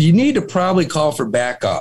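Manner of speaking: plain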